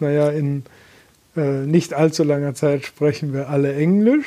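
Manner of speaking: plain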